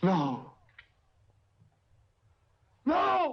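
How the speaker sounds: shouting. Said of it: "And why are you shouting?".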